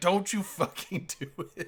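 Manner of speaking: put-on screaming. Imitating everyone out there reacting to tractor beams: imitating people screaming. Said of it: "everyone out there is just screaming".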